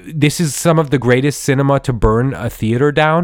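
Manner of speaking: ordinary talk, nothing marked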